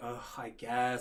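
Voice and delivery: mock half-hearted, unwilling, grudging ugh. Retelling a reply to a coworker's offer: imitating an eye-rolling reluctant reply. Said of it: "I rolled my eyes".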